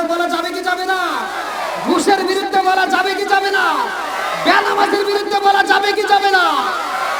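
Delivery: loud, high, rousing rallying shout.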